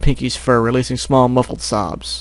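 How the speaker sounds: ordinary delivery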